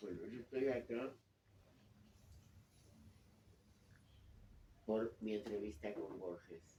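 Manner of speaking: feeble, weakened voice. A moderator says he is here for his interview with Borges; weak voice after illness. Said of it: "Lamento muchísimo estar con esta voz".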